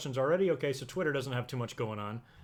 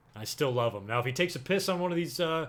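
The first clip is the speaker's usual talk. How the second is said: ordinary talk, nothing marked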